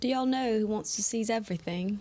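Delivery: faked, put-on British accent. Posing a guessing question to the others, in a british accent. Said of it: "You're giving a British accent".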